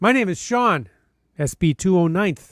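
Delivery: normal talking voice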